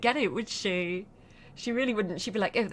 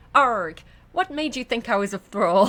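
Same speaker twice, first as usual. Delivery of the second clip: raised voice with Irish lilt creeping in; 9 dB louder than usual. Voicing an offended character's reply, the speaker's accent accidentally comes out Irish. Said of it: "it's just coming out Irish".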